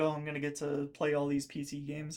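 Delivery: ordinary talk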